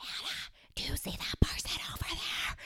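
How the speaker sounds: loud whisper, still half voiced. Imitating a partner who tries to whisper but talks loudly: imitating a loud whisper. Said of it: "he cannot whisper at all".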